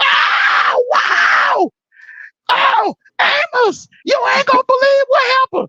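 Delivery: very high, drawn-out shrieked scream. Retelling what was shouted from the living room after a timeout: imitating Lisa screaming. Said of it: "I'm hearing screaming out in the living room".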